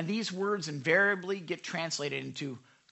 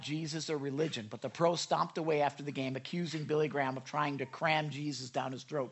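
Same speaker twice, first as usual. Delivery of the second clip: plain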